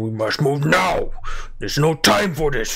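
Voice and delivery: very guttural, large, throaty, halting broken speech. Narrating to players a large voice arguing with another party, guttural voice. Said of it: "you hear a very guttural voice".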